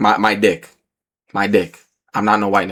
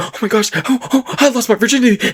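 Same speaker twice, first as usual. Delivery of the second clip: put-on very high, overjoyed, giddy squeal; 13 semitones higher than usual. Retelling own reaction right after the event: imitating own happy excitement. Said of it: "I'm happy".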